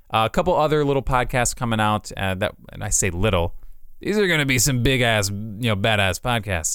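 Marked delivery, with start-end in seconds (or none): none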